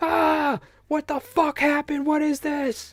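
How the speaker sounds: panicked, shrill, frantic screaming pitched very high. Retelling running to the gym teacher with a dislocated finger: imitating own past screaming. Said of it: "I'm just screaming at him with my finger".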